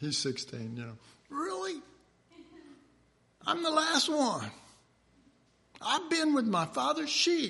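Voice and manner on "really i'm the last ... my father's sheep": put-on very high young boy voice. Retelling the story of David being the last one called, in a young David voice. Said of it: "Hear that young voice?".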